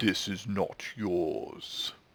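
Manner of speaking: deep, low-pitched voice. A game master voices a chest as it is opened, deep booming voice. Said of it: "you hear a deep booming voice".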